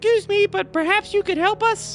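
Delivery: very high, small, tiny little voice. Narrator voices a small creature of sticks hidden in the undergrowth, tiny voice. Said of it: "you all heard a tiny voice say".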